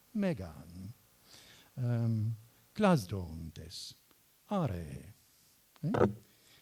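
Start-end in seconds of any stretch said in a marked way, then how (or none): 0.1-0.9 pitch rises on me-, falls on -gan in Megan. Explaining the acute accent on a word: rise on me, fall on gan. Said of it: "the voice should rise and fall. Rise on me, fall on gan".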